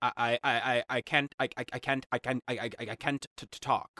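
imitated, put-on stuttering speech. Imitating the king from the movie The King's Speech: imitating a stutter. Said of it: "The whole movie was about him being like".

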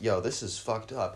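ordinary talk

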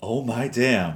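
play-acted stunned surprise, amazed gasping exclamation. Retelling a radio host opening a birthday gift on air: imitating an amazed reaction. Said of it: "you literally hear in his voice, he goes".

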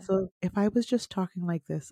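softly spoken. Discussing which voices are appealing, a speaker demonstrates a soft voice. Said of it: "Not higher, softer voices".

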